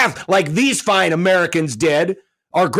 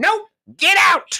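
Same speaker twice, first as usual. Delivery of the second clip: put-on old person voice, higher; 12 semitones higher than usual. Imitating residents turning away outsiders: imitating a resident. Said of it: "now you can do the voice".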